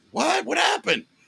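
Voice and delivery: very high, put-on shocked surprise. Retelling a podcast bit where a writer feigns ignorance: imitating Michael Donahue feigning ignorance. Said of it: "acted like he didn't know anything".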